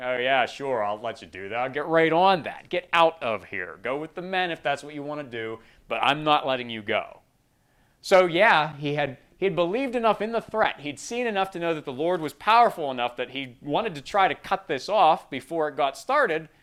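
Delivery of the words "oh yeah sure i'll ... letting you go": put-on mad, sarcastic ruler voice. Retelling Pharaoh's reply to Moses: imitating Pharaoh, mad and sarcastic. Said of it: "And Pharaoh just gets mad, gets sarcastic".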